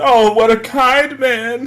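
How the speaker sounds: put-on drunken gushing, very high and very slow. Voicing a character hugging Lirin drunkenly: acting drunk. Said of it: "kinda hugging Lirin drunkenly".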